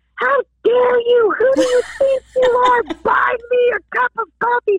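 piercing, shrill, very high-pitched screaming. Speaker retells a woman yelling at them after they paid: imitating a woman screaming. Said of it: "started screaming at me".

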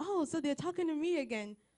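all worked up, thrilled, eager, excited voice. Speaker acting out a listener's reaction to a friend's invitation, mock-excited. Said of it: "you're so excited".

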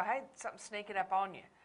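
ordinary talk

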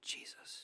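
whispered word. Describing people whispering the name of Jesus to others, whispered 'Jesus'. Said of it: "whispering the name of Jesus".

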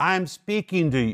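loud, measured voice. Illustrating speaking to one's children who won't listen; retelling a raised voice. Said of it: "You have to raise your voice".

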